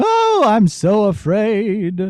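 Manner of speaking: very slow, frightened puppet voice. A puppet maker shows how he voices one of his puppets: puppet voice sounding afraid. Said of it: "make him sound like I'm afraid all of the time".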